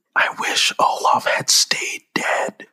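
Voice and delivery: said softly. Warning the other speaker before admitting an opinion about Frozen, said softly. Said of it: "I'm going to say this real soft".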